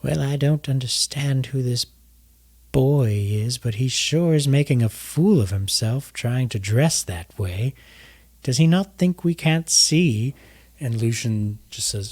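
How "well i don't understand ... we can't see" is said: put-on frail voice of an elderly person. Voicing a person in quiet conversation: old frail voice. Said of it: "this old, frail voice".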